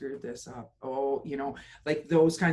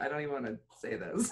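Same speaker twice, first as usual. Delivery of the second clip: put-on scornful tone; 7 dB quieter than usual. Imitating the other speaker repeating a saying: imitating a scornful tone. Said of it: "you can hear the scorn in her voice".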